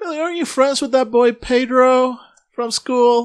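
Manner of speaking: lifted, very high-pitched voice. Retelling a woman asking billy a question, raising her voice a little higher. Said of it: "raising her voice a little higher".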